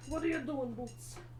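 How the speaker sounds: high, soft cooing pet talk.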